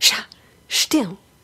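quiet shushing. Showing how to hush someone crinkling wrappers in a movie theater: shushing someone in a movie theater. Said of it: "someone is crinkling wrappers and you go".

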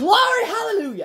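very high, jubilant excited outburst. Standing up from the seat, excited outburst. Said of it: "I got I got excited".

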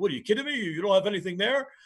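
put-on New York accent. Explaining a play, the speaker repeats a joking remark in a put-on New York accent. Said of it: "He used his New York accent".

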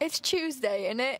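quick, put-on British accent. A cast member, asked on camera for a british accent, answers: british accent. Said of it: "Can you give me a British accent?".

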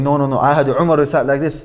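ordinary delivery

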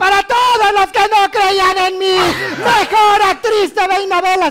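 high, loud, victorious scream. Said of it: "empezó a gritar".

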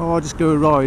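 ordinary delivery

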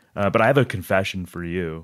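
ordinary delivery

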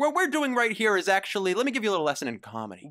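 scripted presenter delivery. A speaker explains the group's shtick: sounds read off a teleprompter. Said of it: "Why do you sound like you're like on a teleprompter".

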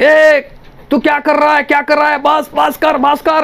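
put-on pained yelling. The narrator recounts shouting at someone who was hurting him, retelling a pained shout. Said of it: "मैं चिल्लाने लगा दर्द के मारे".

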